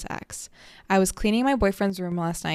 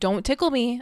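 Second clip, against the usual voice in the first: stern, no-nonsense, serious, pitched up; 5 semitones higher than usual. Retelling a warning given to someone who tickles her: serious warning, imitating herself. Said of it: "I get so serious".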